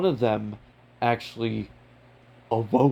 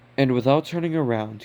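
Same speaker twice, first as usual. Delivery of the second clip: ordinary delivery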